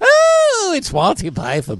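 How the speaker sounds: very high, slow, drawn-out, swooping regal voice. Asked to bring back an impression, the speaker does a Queen impression. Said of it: "my incredible impression of the Queen".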